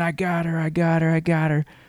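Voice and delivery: put-on, high-pitched, shrieked, repeated scream. Retelling a movie scene after a shooting: imitating someone screaming. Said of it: "she's screaming".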